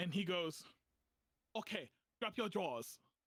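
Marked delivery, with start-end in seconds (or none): 1.6-3.0 fake, put-on Chinese accent. Retelling what a Chinese man told him while he was in pain: put-on Chinese accent. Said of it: "I'm going to do the accent".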